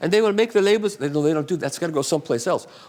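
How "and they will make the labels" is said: put-on German accent, pitched up. Retelling what a man asked on a phone call: German accent. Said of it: "I'll do my German accent".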